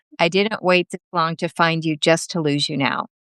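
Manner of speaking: ordinary talk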